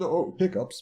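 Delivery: very high, silly, squeaky put-on voice. Excusing an interruption by naming hiccups: daft voice. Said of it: "put quite such a daft voice on to say hiccups".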